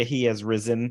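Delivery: ordinary delivery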